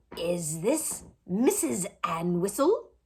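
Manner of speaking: put-on slow, wheezing voice. Narrator voicing a phone caller's question, wheezy voice. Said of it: "A wheezy voice asked".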